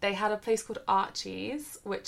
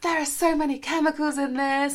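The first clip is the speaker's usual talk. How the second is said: put-on panicked voice, higher and louder; 7 semitones higher, 8 dB louder than usual. Retelling a friend taking off nail varnish: imitating Lauren panicking. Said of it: "Lauren had a panic".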